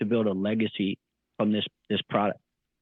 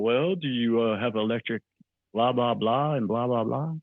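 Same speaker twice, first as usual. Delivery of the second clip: mocking, dopey, pestering, dumb-sounding voice. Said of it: "the voice of people asking dumb questions".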